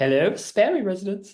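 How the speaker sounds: put-on posh telephone manner. Imitating how a mum answers the phone: imitating mum's posh phone voice. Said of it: "it's so posh".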